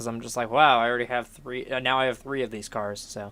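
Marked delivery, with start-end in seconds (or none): none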